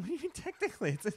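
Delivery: high, laughing, disbelieving voice.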